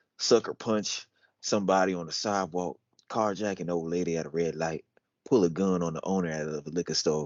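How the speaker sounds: low, put-on country accent. Speaker reading a script line again, insisting on a country accent. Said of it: "We'll do it in a country accent. That's the only way I'm reading it again. I'm reading it like this".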